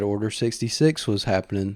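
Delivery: ordinary delivery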